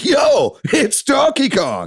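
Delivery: mock very high, very slow, enthusiastic announcer voice. Retelling the new Direct announcer's opening line: imitating an enthusiastic announcer. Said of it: "have some enthusiasm in the voice".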